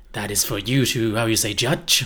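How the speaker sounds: bad, put-on French accent. Asked for their best foreign accent, the speaker shows off a put-on french accent. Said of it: "what would you say is your best foreign accent?".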